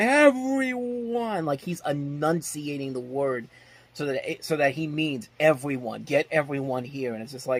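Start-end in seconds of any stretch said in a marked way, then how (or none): 0.0-1.5 very high, shrill, enunciated scream, acted out. Describing a film scene, the speaker imitates Gary Oldman screaming. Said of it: "He's screaming at the top of his lungs".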